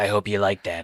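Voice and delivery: put-on puppet character voice. Joking about what the puppet would say, speaking as the puppet. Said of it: "I want the puppet to jump me like".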